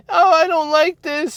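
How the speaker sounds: very high, put-on childlike voice. Describing how people voice what bothers them, kid voice. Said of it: "the kid voice of like".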